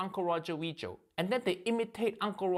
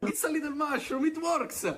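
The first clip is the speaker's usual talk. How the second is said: comedic, mock put-on Italian accent; 7 semitones higher than usual. A comedian showing what other comedians do, in a comedic Italian accent. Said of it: "When other comedians do Italian accent".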